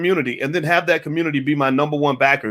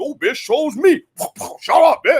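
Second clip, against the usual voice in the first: put-on bossy yelling, very high pitched; 11 semitones higher than usual. Retelling a Zoom call where Joe Biden yelled: Joe Biden yelling like a pimp. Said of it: "like a pimp yelling at a pack of hoes".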